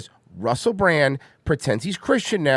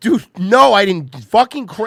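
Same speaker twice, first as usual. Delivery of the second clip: high, loud, frantic, panicked scream; 7 semitones higher, 7 dB louder than usual. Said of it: "screaming in that panicky way".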